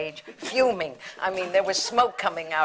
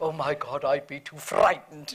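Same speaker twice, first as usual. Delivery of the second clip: marvelous, deep, resonant, sonorous tone; 4 semitones lower than usual. Retelling what Sir John said when asked about breaking up: imitating a marvelous sonorous voice. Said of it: "in that marvelous, sonorous voice".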